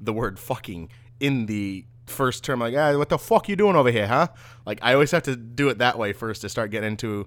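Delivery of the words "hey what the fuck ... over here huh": loud, put-on Boston accent. Showing how they start getting into a Boston accent, in a Boston accent. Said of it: "But then the Boston accent".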